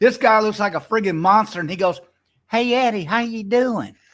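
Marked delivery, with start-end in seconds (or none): 2.5-3.9 put-on man's high-pitched little girl voice. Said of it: "his voice is like a high pitched little girl".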